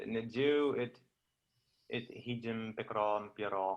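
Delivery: ordinary talk, nothing marked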